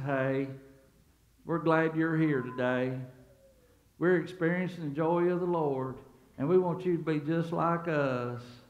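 mock mournful, gloomy, joyless, lifeless delivery. Imitating a greeter at a dead church: mock gloomy greeting. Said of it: "he greets you like this".

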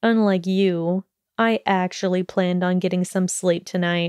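ordinary talk

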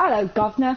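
put-on British accent. Switching into a British accent on the spot: British accent. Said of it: "Be a British accent".

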